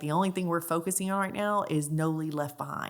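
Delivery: ordinary delivery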